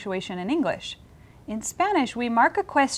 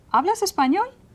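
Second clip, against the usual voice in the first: rising pitch at the end of español; 8 semitones higher, 4 dB louder than usual. Spanish lesson on asking questions, rising question intonation on español. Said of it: "So my intonation has to rise at the end".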